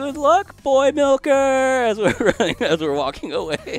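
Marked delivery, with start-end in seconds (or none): 0.0-1.3 big voice, much higher and louder. Speaker retells a woman calling after them as they walk away, in a big voice. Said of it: "in this big voice goes like".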